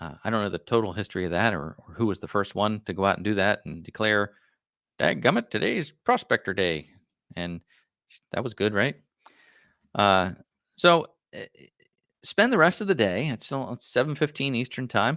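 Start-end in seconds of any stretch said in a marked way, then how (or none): 5.0-6.9 put-on, swooping, grizzled old-timer prospector voice. Speaker imagining whoever first declared the holiday, grizzled prospector voice. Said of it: "Talk Like a Grizzled Prospector Day".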